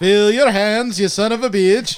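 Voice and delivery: put-on cowboy voice with a Dutch accent. Joking about a Dutch man playing a cowboy: Dutch John Wayne voice. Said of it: "Just Dutch John Wayne".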